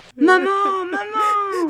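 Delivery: very high, anguished cry of pain. Narrator voices the whipped victim calling for his mother: crying out. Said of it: "cria celui-ci".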